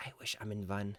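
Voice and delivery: put-on very soft, hushed German accent. Voicing a passenger watching the cars go by, in a German accent. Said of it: "I don't know why I'm using a German accent".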